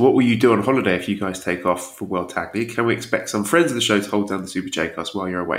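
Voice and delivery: normal talking voice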